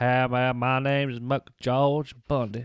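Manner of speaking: slow, slack-jawed, drawling yokel voice. Imagining aloud how McGeorge Bundy sounds: slack-jawed yokel voice as McGeorge Bundy. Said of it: "He sounds like a slack-jawed Yoko".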